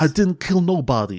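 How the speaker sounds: put-on Brooklyn accent. Quoting a line from the film in Brendan Fraser's Brooklyn accent: imitating Brendan Fraser's Brooklyn accent. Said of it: "a bit of the sort of Brooklyn accent he's".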